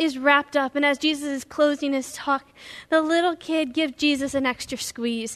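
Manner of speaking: ordinary delivery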